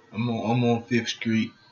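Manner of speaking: low, quiet, mumbling, half-asleep voice. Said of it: "That's how he be sounding on the phone for real".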